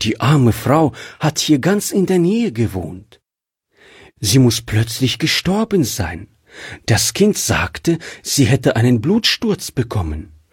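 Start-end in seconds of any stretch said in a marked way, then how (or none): none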